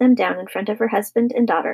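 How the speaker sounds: ordinary delivery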